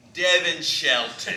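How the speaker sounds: loud, badly done put-on Australian accent. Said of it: "I'll do a bad accent".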